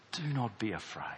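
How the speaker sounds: soft, gentle, fatherly, reassuring tone. Acting out a father who rests his hands on your shoulders, acting gently reassuring. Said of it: "Do you hear the difference? ... One is a reassurance from a loving parent".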